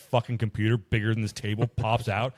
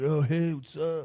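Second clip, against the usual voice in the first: slow, dopey, dim-witted surfer-dude drawl; 5 semitones higher than usual. Mocking a long-haired guy with a big belt buckle, doing a dopey surfer voice. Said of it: "floating between surfer voice and like dum dum".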